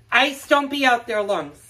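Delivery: loud, high-pitched yell. Calling out to a dog going out in pouring rain: screaming at a dog.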